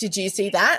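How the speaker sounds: ordinary talk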